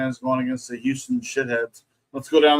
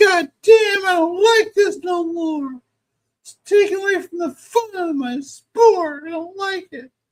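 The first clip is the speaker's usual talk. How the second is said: very high-pitched, slow, drawn-out complaining tone; 4 dB louder than usual. Playing a sports purist complaining about change: Jim Cornette voice. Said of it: "I'm gonna use the Jim Cornette voice".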